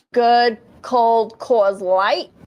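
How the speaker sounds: put-on high, loud, babyish baby-talk voice. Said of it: "a baby voice".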